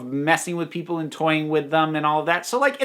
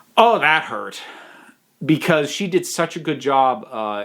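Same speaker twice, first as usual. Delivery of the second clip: normal talking voice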